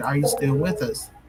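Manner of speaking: usual speaking voice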